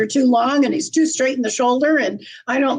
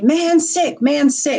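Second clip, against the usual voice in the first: put-on screaming; 3 semitones higher than usual. Retelling a message that guidance screamed: imitating a scream. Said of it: "guidance screamed at me".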